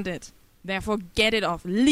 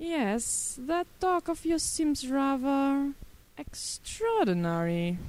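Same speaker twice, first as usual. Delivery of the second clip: bored, uninterested, slow, drawn-out drawl; 6 semitones higher, 3 dB quieter than usual. A man answers the other speaker, bored. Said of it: "tone bored".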